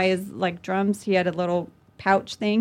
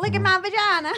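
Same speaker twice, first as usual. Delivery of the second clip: put-on voice goes way up high, Southern accent; 12 semitones higher than usual. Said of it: "[name], which was just me being Southern".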